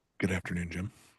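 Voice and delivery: soft, hushed whisper. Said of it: "are you whispering?".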